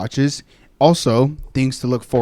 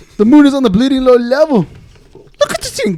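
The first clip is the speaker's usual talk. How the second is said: very loud, high-pitched, swooping, belted shout; 14 semitones higher, 9 dB louder than usual. Trying an accent challenge impression: Conor McGregor impression. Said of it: "What does Conor McGregor say?".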